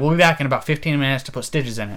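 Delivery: ordinary talk, nothing marked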